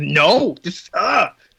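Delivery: angry, very slow and drawn out. Retelling what a fed-up character keeps saying: imitating a mad character. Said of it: "He's so mad".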